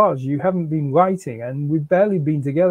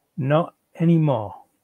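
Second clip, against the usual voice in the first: ordinary delivery, nothing marked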